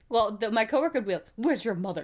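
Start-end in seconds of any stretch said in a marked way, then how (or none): 1.3-2.0 strict, stern, reproachful scolding tone. Retelling how a coworker scolded kids in retail: imitating a stern coworker. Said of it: "really stern with them".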